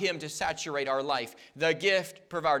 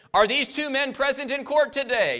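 big, booming, thundering voice; 9 semitones higher, 6 dB louder than usual. Telling a story about a robbery trial, quoting the prosecutor's question in a booming voice. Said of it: "the prosecutor boomed".

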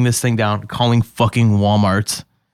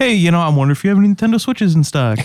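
raised, pitched-up friendly customer-service phone voice; 8 semitones higher than usual. Retelling calling stores to ask for stock: imitating a raised friendly phone voice. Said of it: "you just turn it on and be like".

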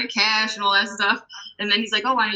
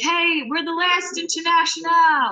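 mock yell, high and raised; 9 semitones higher than usual. Speaker, alone on stage with an acoustic guitar, retells yelling to the crowd. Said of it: "I yelled to the crowd".

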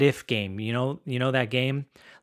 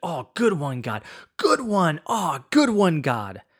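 put-on excited awed whisper, higher and slower; 4 semitones higher than usual. Recalling Jeff walking through the exhibits, imitating Jeff's excited whisper. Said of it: "bouncing around this place like a kid in a candy shop".

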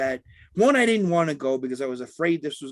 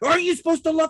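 shrill, very high-pitched screaming; 11 semitones higher than usual. Speaker retelling what they screamed at a man off the train: retelling a scream at someone. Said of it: "As I'm screaming at him".

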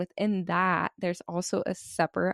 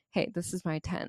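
mock-serious tone, much quieter; 7 dB quieter than usual. Retelling a camper claiming his tent, imitating his serious tone. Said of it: "the seriousness of his tone of voice".

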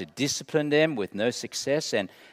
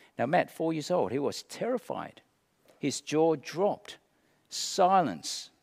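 normal talking voice

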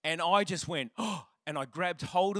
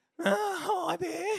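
put-on cracking, high teenage voice. Retelling a nervous first phone call, voice breaking: Simpsons pimple-faced teen voice. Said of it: "I sound like the guy on Simpsons".

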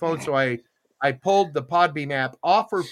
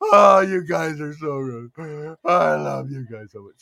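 mock tearful drunk crying voice; 3 dB louder than usual. Imitating own future self as a crying drunk: mock tearful drunk. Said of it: "I am a crying drunk".

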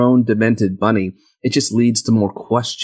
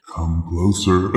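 haunting, creepy, eerie beckoning voice; 5 semitones lower, 3 dB quieter than usual. Retelling a film scene, imitating Frank's haunting voice. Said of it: "that's scary".

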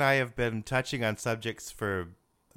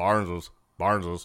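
low, slow put-on grandpa voice. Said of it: "He had that great phone voice".

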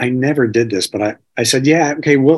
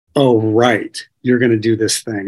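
put-on mocking, sarcastic tone. Retelling the guru's reply-all email to the community: imitating a mocking tone. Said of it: "It was a mocking tone of".

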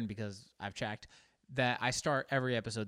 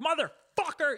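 very high, loud, furious yell; 5 dB louder than usual. Describing what happens when someone cuts you off, an angry yell. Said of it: "you yell".

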